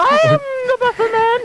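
very high squeaky cartoon voice. In a Christmas skit, answering another performer, voice like Mickey Mouse. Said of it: "Sounded like Mickey Mouse".

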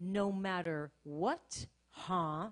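taunting, scornful, sneering, mocking tone. Sitting in the car, the speaker retells the enemy's voice, imitating a mocking tone. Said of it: "It was a mocking tone".

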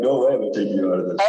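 normal talking voice

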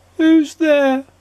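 loud, very high, sad little squeaky voice. Reading a story, a voice answers a knock at a red door: sad, squeaky voice. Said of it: "A sad, squeaky sort of voice".

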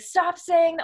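acted-out scream. Retelling how a man freaked out while being held back, retelling him screaming. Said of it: "he was screaming".

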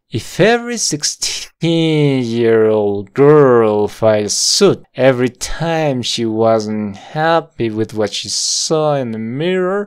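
very slow, drawn-out, every word stretched apart. Drilling an english sentence with a learner: very slow. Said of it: "Todo muy lento sonaría como".

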